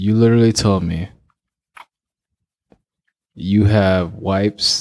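very slow, deliberate, carefully enunciated and clear speech. Calling time out to correct the other speaker, very slow and clear. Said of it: "I'm going to speak very slowly and clearly".

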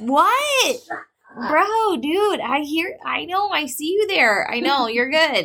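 high-pitched, exasperated, fed-up pleading tone. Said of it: "you're like".

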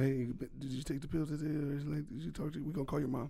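discreet, soft, hushed teacher whisper. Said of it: "Come to you, whisper".

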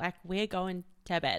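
ordinary talk

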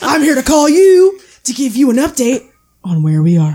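loud, swooping dude voice. Imagining a caller phoning with an update, in a stereotypical bro voice. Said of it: "the stereotypical bro voice".

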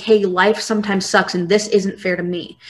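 usual speaking voice

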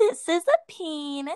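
sudden, abrupt, dead-serious delivery, high and loud. Retelling how a serious talk suddenly turned odd: imitating the lady's sudden delivery. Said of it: "all of a sudden she's like".

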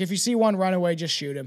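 ordinary talk

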